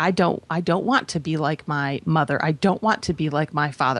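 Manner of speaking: plain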